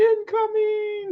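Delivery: cute, tiny, very high little voice. Retelling a funny landing call, imitating Bo's little voice. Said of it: "It's so cute in his little voice".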